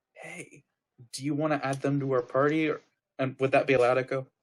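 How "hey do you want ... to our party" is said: whisper, pitched higher. Playing a character pulling a teammate aside: whispering to a teammate. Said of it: "kinda whisper to him".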